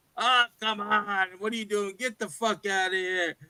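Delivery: play-acted jeering, dismissive tone, spoken through laughter. Retelling how neighborhood boys mocked him: imitating boys laughing at him. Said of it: "laughing at me".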